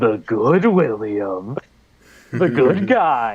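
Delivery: low, slow, sinister, villainous drawl. Retelling a cartoon scene, a villain claiming to be good: evil sounding voice. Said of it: "a very evil sounding voice".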